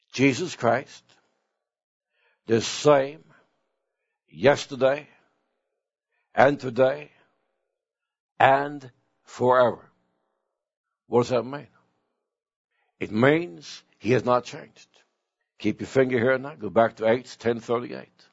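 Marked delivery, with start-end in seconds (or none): 0.1-9.9 very slow, deliberate, word-by-word reading. Rereading a Bible verse aloud for listeners, very slow reading. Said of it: "Let's read it slow again".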